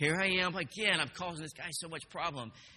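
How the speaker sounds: ordinary talk, nothing marked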